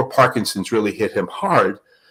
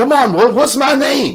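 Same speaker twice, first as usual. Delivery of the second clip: very high pitch, going way up; 4 dB louder than usual. Retelling a boxer questioning an old man in a wheelchair: imitating Muhammad Ali.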